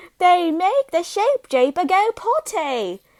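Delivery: put-on British accent, high and slow. Quoting someone's line while recapping a story, in a British accent. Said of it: "I said it in a British accent".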